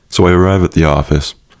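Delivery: plain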